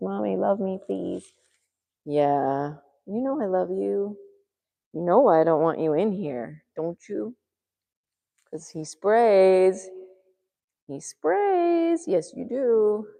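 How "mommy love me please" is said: rough, creaky, crying cat voice. Introducing a pet to friends on the internet, voicing the pet. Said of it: "He says".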